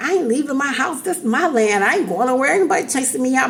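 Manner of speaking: tough, stubborn, big and bad defiant talk. Retelling own past refusal to leave the house: imitating talking big and bad. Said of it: "I was talking like that".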